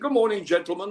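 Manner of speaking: put-on very British accent. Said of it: "He used to do his very British accent".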